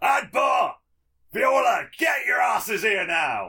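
hollered, head-back yell. Rearing his head back for his bonus action, calling his allies over: yelling. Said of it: "he yells".

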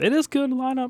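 very high, half-hearted, unconvinced tone. Conceding to another speaker that the lineup is good: voice going a little high, unconvinced. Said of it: "your voice went a little high there".

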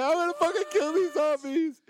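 mock shrill, very high, angry, worked-up emotional outburst. Acting out a gamer's reaction to a story scene: acting out emotional anger. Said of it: "I'm all emotional".

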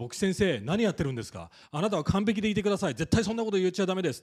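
quick, loud scolding tone.

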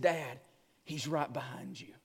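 very low, deep, hushed, eerie creepy voice. Retelling a son leaning toward his dad, in a creepy voice. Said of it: "in this very creepy voice".

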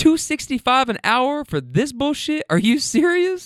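high, exasperated, incredulous complaining tone.

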